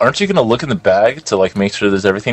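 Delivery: plain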